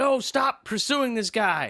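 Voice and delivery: put-on cop voice, high, barking yell. Retelling a car chase scene where one cop yells at another: imitating a cop yelling. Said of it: "he's yelling at her like".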